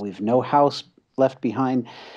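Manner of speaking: ordinary delivery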